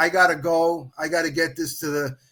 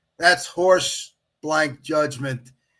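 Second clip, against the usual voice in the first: ordinary talk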